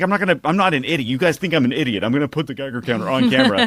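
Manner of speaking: mock mad rant. Retelling a video maker's rant at his commenters: imitating an angry rant. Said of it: "pissed off".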